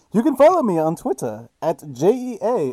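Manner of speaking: muffled through cupped hands, cheerleader-like sound. Podcast host giving his twitter handle through his hands: muffled through cupped hands. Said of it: "It kind of sounds like I'm a cheerleader now".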